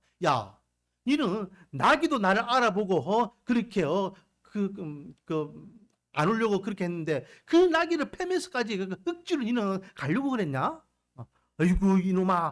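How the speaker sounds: ordinary delivery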